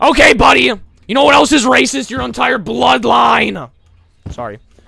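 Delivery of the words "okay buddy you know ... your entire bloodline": loud, heated, angry tone. Answering a chat viewer who called the yelling racist: angry. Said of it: "I'm getting angry at that guy".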